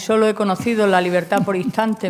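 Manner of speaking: ordinary talk, nothing marked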